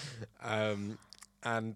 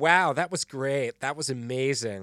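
put-on slow, loud, obnoxious American accent. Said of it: "very obnoxious, very loud American accent".

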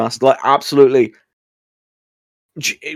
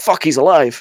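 plain

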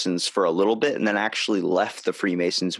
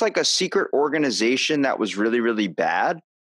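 usual speaking voice

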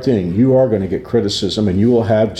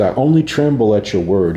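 plain

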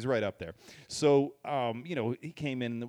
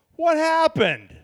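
put-on high, loud, startled voice. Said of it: "That actually kinda sounded like him".

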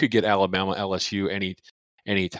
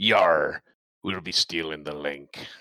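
corny put-on stage-pirate growl on "yar"; 5 semitones lower than usual. Joking about stealing a link to watch the game, pirate voice on yar. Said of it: "Was that kind of corny to do a pirate voice there?".

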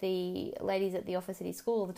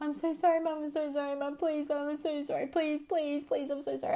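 put-on high, tearful, crying child pleading; 7 semitones higher than usual. Retelling a child's breakdown over spilled milk: imitating a crying, pleading child. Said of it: "he literally was crying over spilled milk".

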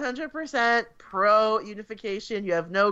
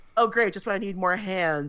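mock dry, deadpan delivery; 2 semitones lower than usual. Recounting a scene where a woman answers a man, imitating a dry deadpan. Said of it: "So dry and deadpan about it".

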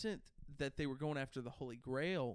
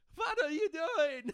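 very high, very loud, put-on German accent; 8 dB louder than usual. Attempting an impression for another speaker: German Jerry Seinfeld impression. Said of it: "trying to do a German Jerry Seinfeld".

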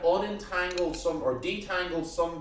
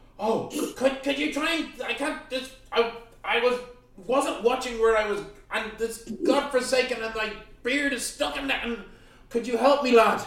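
flustered, stumbling, high-pitched pleading cry; 6 semitones higher than usual. Voicing a dwarf with his beard stuck in a tree, pleading for help. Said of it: "he grasps his hand, he sees you, says".

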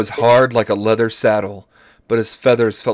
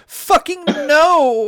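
very high shriek, stretching out the word "no". Reading a story aloud, Tanis's line before leaping: shouting. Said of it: "she shouted".

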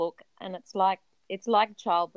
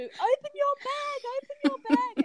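mock, shrill, urgent, very high repeated yelling. Retelling yelling at the older of the two, retelling a yell. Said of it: "I'm yelling at the older of the two".

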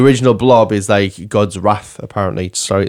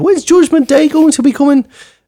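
put-on high-pitched Irish old lady voice. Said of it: "I don't know why she's Irish".

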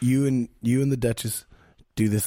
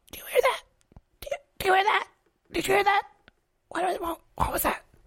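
put-on goblin voice, higher. Voicing a goblin who hears a noise: goblin voice. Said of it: "you hear one of the goblins go".

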